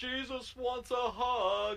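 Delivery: high vampire voice, "hug" drawn out. Retelling a scene from an abridged show to friends, in the vampire voice. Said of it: "this vampire voice comes on and goes".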